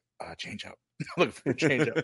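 hushed, secretive, confiding whisper. Retelling what a mic'd-up player said during the game: imitating a whisper.

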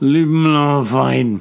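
put-on slurred, fuzzy-tongued drunken speech, hysterical. A drunk man tries to tell someone to leave him alone: drunk, slurring words. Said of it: "between the drunken hysterics and his fuzzy tongue".

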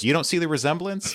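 flat, completely serious delivery. Recounting a scene, quoting her reply to the man, retelling a deadpan reply. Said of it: "she just deadpan looks at him and says".

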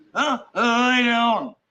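barely intelligible, dragged-out words. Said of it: "The radio can't understand [name] 'cause obviously he can barely talk".

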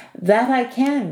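glad, eager, happy, high-pitched cry. Rory answers the old man's request to fetch water, crying out happily. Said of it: "Rory cried happily".

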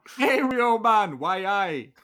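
put-on high, loud Geordie accent. Describing a Jamaican character who sounds like a Geordie, quoting him: Tom's Geordie accent. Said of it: "sounds like a Geordie".

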